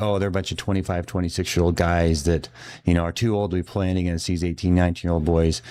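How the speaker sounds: plain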